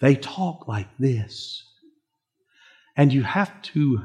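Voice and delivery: gentle, soft-spoken, hushed murmur. Describing a family member who speaks softly, imitating soft speaking. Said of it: "has the gift of soft speaking".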